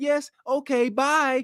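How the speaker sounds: sweet customer service voice. Describing how women talk to strangers on the phone: sweet customer service voice. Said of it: "that sweet customer service voice".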